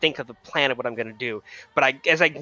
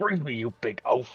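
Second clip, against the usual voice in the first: muttering in a low voice; 6 dB quieter than usual. Game master voices Alistair, stuck in a web as players approach, muttering under his breath. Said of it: "mutter under his breath".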